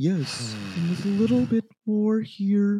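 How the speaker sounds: blood-chilling put-on voice. Imitating how Gary's voice sounds like Warren Jeffs: Warren Jeffs voice. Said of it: "it's a little Warren Jeffsy".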